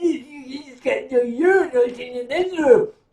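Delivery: mock drunk, loud, stammering, stumbling speech. Retelling a drinking contest, imitating a drunk friend in the restroom. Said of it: "got so utterly shit-faced".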